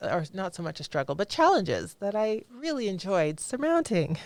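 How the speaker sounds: dripping, extreme sarcasm with swooping tune. Telling another speaker about a difficult time: extreme sarcasm. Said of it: "Extreme sarcasm".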